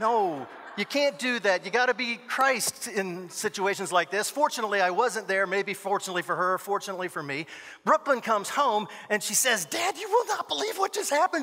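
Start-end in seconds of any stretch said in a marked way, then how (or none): 9.7-11.4 very high, worked-up, upset voice. Retelling what an upset daughter said on coming home: imitating an upset daughter. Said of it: "She's all upset".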